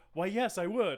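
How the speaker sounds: put-on sincere, wholesome, earnest tone. Retelling a character's reply to a party invitation: imitating an earnest reply. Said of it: "just so, like, earnestly".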